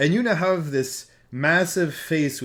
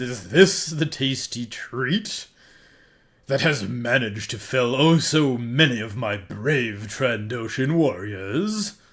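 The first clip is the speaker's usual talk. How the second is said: words laced with a light, little laugh; 3 semitones lower than usual. Voicing a big-mouthed creature speaking to Mipple, laughing while speaking. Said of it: "And he laughs a little bit and he says".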